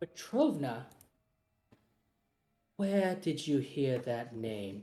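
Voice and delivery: very serious, grave tone, low and hushed. In a roleplay, a character asked about a name answers in a very serious voice. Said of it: "And her voice gets very, very serious".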